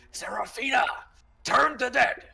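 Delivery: loud, very high, rough, raw scream. A game player's character screams over to serafina: in-character scream. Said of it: "yell towards her and I scream".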